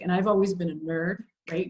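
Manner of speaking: plain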